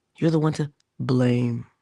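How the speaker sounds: ordinary delivery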